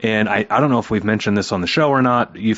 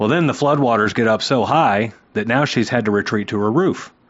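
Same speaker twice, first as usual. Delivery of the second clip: ordinary talk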